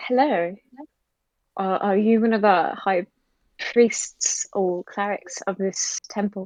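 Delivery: mild-mannered, careful, gentle, hesitant delivery. A player's character approaching a plate-mailed figure in a temple, softly spoken. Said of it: "just kind of softly spoken".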